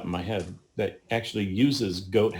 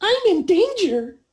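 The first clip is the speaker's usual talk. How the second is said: shrill, tiny pixie cry, very high and very loud; 8 dB louder than usual. Describing him scrambling up the rocks, saying it in a pixie voice. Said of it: "you hear in this pixie voice".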